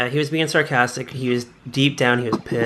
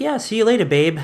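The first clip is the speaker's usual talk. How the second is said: casual, breezy, high, unbothered, nonchalant; 9 semitones higher than usual. Retelling a character's parting words to the girl: imitating a nonchalant reply. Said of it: "all nonchalant".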